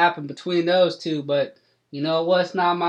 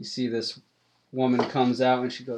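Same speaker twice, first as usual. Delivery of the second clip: usual speaking voice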